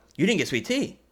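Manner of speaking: "tea" rising in pitch, statement sounding questioning. Reacting to someone who didn't get sweet tea, question intonation ending on 'tea'. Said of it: "Like you ask a question with that inflection".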